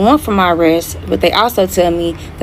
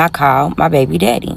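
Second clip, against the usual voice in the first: usual speaking voice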